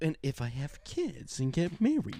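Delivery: slow, swooping mimicked way of talking. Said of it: "It's just the way you say things".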